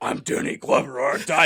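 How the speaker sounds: put-on gruff, rough-sounding voice. Mocking someone's muddled impression: Danny Glover impression. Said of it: "can't even keep his two impressions straight".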